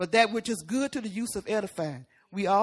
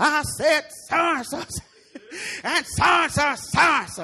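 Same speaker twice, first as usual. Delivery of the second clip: loud, raised-pitch, angry clamor. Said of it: "being like a judge".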